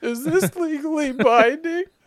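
very high, loud, trembling, shaky quaver. Repeating the other speaker's question back at him in a mock shaky voice. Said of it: "He says with a shaky voice".

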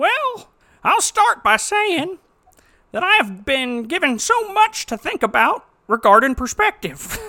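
shrill, pitched-way-up, very loud put-on voice. Reading out a written review aloud: Scott voice. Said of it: "Let me put on my best Scott voice".

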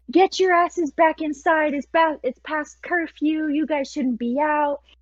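loud shouted scolding in a woman's voice. Retelling how a woman came out and started yelling: imitating a woman yelling. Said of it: "she starts yelling at us".

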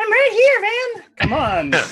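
shouting in tiny voice. A seven-inch-tall character calls to someone who can't hear him, tiny character shouting. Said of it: "You can shout".

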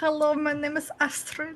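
put-on high German accent. Introducing herself to the audience: German and Jester voice mix. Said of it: "trying to go for, like, a German and Jester".

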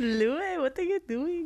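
put-on Indian accent. Recalling what Zane used to say, doing a Zane impression sounding Indian. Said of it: "Why do you make him sound Indian?".

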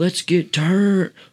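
shrill, very high, off-the-walls screaming. Describing a stranger who showed up, acting out his screaming. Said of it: "he's just screaming".

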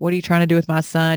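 mock grilling, interrogating tone. Retelling a partner's mom questioning someone at work: imitating a mom grilling. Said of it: "grills you, gives you questioning".

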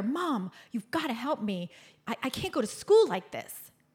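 play-acted child voice, crying, desperate, tearful pleading. Retelling shaking a mother by the shoulders: imitating own childhood pleading. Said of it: "I grab her by the shoulders and I'm, I shake her".

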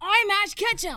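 very high, very loud, belted anime hero voice. Answering the other's attempt with a good Ash Ketchum impression. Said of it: "Why are you so good at that?".

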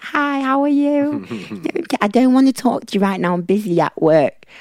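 very high, piping, high-pitched voice. Describing a woman and mimicking how she talks: imitating high-pitched voice. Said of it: "She's got a really high pitched voice".

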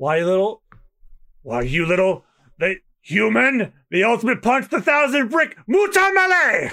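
mock French-accented yelling. Host acting out a fight from the French dub, fake French yelling as Sanji. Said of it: "I'm doing what I think that sounds like".

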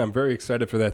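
ordinary talk

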